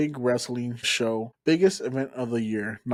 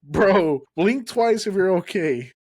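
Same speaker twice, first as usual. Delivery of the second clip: acted, loud, high shouted call; 7 semitones higher, 5 dB louder than usual. Retelling yelling to a knocked-out wrestler: retelling a yell. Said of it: "I yell".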